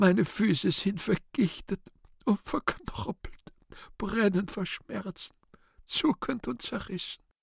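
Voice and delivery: crying hard, intense, voice very high. In a radio drama, God the Father answers the cherub's lament, weeping intensely. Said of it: "Gottvater intensiver weinend".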